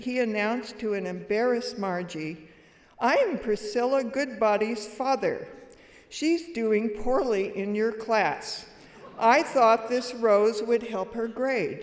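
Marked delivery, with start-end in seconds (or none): 3.0-11.8 play-acted, big, loud booming proclamation voice. Retelling how a father burst into class with a rose, announcing it in a booming voice. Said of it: "In his booming voice".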